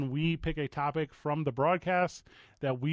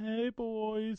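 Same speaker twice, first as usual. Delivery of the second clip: odd, off-kilter, weird, pitched-up delivery; 7 semitones higher, 5 dB quieter than usual. Inviting the show's listeners to stop by and greet the hosts: weird-sounding greeting. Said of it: "It sounded weird when I said it like that".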